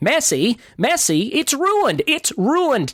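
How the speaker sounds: very high, swooping cartoon voice, slow pace. Showing how they talk like Rabbit from Winnie the Pooh: Rabbit voice. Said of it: "you can have fun listening to me talk like Rabbit".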